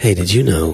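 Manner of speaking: alluring, deep, attractive low voice. Speakers joking about ads with attractive people, one in a deep, attractive voice. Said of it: "In a deep, attractive voice".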